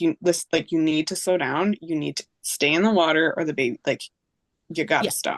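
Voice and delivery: ordinary talk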